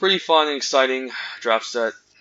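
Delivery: dry, tongue-in-cheek sarcastic tone. Describing a losing draft set, sarcastic. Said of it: "Just being, uh, sarcastic".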